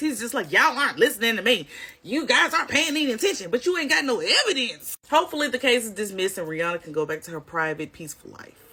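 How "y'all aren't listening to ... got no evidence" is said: angry, voice full of anger. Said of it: "you'll see the anger in his voice".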